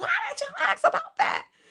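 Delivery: mock shrill, very high-pitched shouting. Retelling yelling at the TV while watching at home: retelling own yelling. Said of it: "I literally was yelling at the T V".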